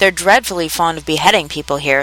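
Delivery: ordinary delivery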